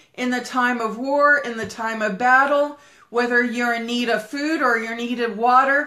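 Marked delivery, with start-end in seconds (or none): none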